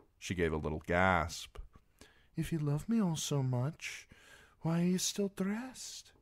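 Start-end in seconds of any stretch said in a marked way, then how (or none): 2.4-6.0 whispered line pitched very high. A narrator reading a woman's line in a love scene, whispered. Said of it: "She whispered".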